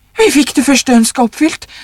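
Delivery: hectic, frantic, high, rushed outburst. The old woman answers the old man, speaking frantically. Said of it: "sa den gamle konen hektisk".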